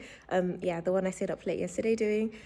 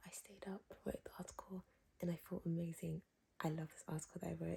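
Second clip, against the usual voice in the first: hushed, soft whisper; 3 semitones lower, 16 dB quieter than usual. Vlogging while everyone else is sleeping, whispering. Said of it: "I'm whispering because everyone's sleeping".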